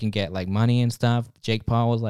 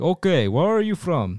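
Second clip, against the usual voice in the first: put-on Russian accent, pitched higher; 5 semitones higher than usual. Speaker acting out being asked questions about joining the Legionnaires: Russian accent. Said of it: "I don't even know why I'm giving a Russian accent".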